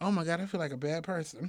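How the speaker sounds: ordinary delivery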